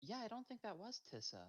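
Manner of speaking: muttered quietly under the breath. Voicing a character muttering after the prisoner leaves: under her breath. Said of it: "Runa will just say under her breath".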